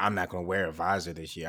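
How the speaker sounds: put-on mocking voice. Mimicking someone during a talk about a player, in a put-on mocking voice. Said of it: "that voice that you put on when you be talking about folks".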